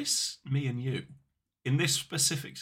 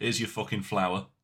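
put-on blunt, plain-talking voice. Doing an impression of Frank Miller after asking if the other wants to hear it. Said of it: "my impression of Frank Miller".

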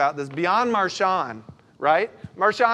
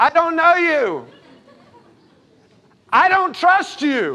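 very high, shrill, swooping, drawn-out scream; 10 semitones higher, 6 dB louder than usual. Telling a story about a man trying to take control, retelling her scream. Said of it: "She screams".

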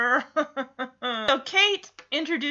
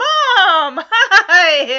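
high, loud, put-on cheerful voice; 5 semitones higher, 11 dB louder than usual. Retelling a character greeting her mother with a fake smile: imitating a fake cheerful greeting. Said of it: "this fake smile plastered on her face".

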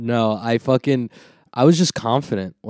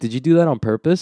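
ordinary delivery

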